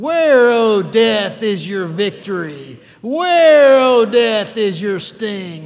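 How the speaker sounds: loud, drawn-out, smart-alecky, sarcastic, victorious jeer. Leading the congregation in a victory taunt at death: sarcastic victory taunt. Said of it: "put a little, uh, sarcasm in there".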